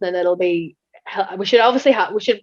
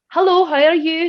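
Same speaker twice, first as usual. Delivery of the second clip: put-on Scottish accent, easy and chatty; 9 semitones higher, 3 dB louder than usual. Showing how the speaker greets anyone, scottish accent. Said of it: "Talking away like I'm Scottish".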